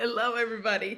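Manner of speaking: speech broken up by laughter. Greeting listeners at the start of an interview, laughing while talking. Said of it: "Stop laughing at me".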